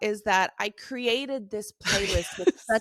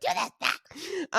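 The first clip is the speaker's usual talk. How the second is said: acted screaming, higher; 4 semitones higher, 3 dB quieter than usual. Retelling giving orders to someone: imitating own screaming. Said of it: "screaming at him".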